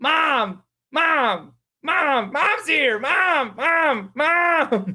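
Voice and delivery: very high, very slow, drawn-out little-creature shouting. Voicing a crowd of small plant creatures: plant creatures shouting. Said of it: "plant creatures shouting".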